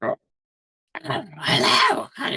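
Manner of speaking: very high little goblin voice. Narrator voicing a goblin who greets the listeners, in a little goblin voice. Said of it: "like a little goblin voice".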